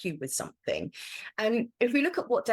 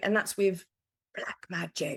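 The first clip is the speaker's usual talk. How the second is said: speaking in a whisper. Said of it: "Why am I whispering?".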